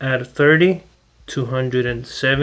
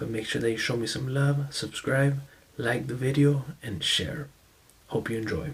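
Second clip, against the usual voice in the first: barely audible, hushed, very quiet half-whisper; 2 semitones lower, 11 dB quieter than usual. Opening a video for viewers late at night, half-whispering. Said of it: "so I have to whisper".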